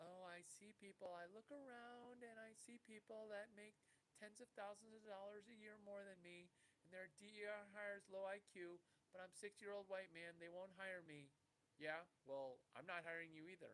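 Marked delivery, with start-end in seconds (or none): 0.0-11.3 taunting, mocking put-on girl voice. Mocking someone's complaint about not getting hired: mocking girl voice imitating Larry. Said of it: "This is your girl voice".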